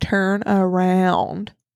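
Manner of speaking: mock sassy, put-on tone. Retelling a quoted line from a scene: put-on sassy tone. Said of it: "'cause that's really sassy in this moment".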